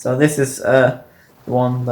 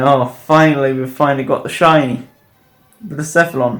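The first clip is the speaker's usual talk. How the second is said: ordinary delivery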